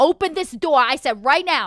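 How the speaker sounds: threatening, menacing motherly voice. Voicing a character ordering someone to open the door: threatening mom voice. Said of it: "'cause it sounded threatening".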